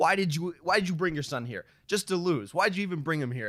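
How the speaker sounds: high-pitched, taunting trash-talk voice. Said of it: "And just trash talk and be like".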